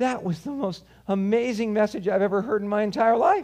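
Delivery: put-on choked-up voice. Retelling what a man in tears said after a message, imitating a man in tears. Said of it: "in his tears, and he can barely speak".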